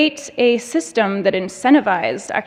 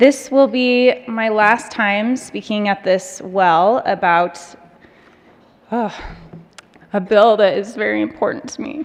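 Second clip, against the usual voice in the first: tearful, choked up, voice breaking and catching. A senator addressing the President and members, choking up. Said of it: "I never know when I'm going to cry about this".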